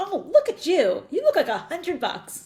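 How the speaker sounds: high, loud, gushing, sing-song enthusiastic burst. Retelling a compliment on a brand new suit: retelling an enthusiastic yell. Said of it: "I yell out in real enthusiasm".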